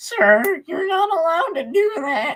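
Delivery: put-on very high, loud, squeaky teenager voice. Suggesting how a man they met talked, squeaky teen voice. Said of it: "more like the squeaky voiced teen".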